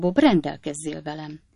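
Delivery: plain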